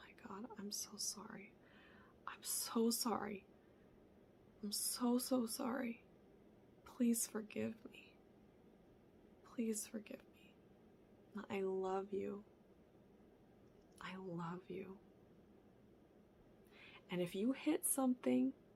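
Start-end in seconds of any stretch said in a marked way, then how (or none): 0.0-15.0 soft, breathy, tender, hushed, soothing whisper. Showing how to talk to your inner child: soothing parenting voice. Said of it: "talk to yourself in the soothing parenting voice".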